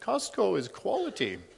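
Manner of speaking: put-on high Polish-accented voice. Quoting a woman's well-known family-joke saying, in a put-on Polish accent. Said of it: "She always says in her Polish accent".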